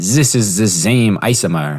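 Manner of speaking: horrible, clumsy put-on German accent. Showing how a German speaker would say a word: horrible German accent. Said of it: "which is a horrible German accent".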